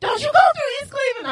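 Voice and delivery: mock frantic, high-pitched scream. Retelling how a man screamed at him while he was in his car, retelling a scream. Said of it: "So he's like screaming".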